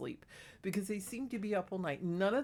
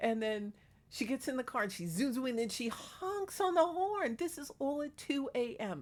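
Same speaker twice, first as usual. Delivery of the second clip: ordinary delivery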